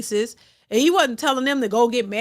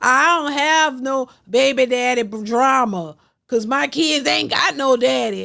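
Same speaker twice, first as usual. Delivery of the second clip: mock gleeful, proud, joyful boasting tone. Imitating women quoted as talking about their kids: imitating a gleeful proud tone. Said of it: "you saying that with glee?".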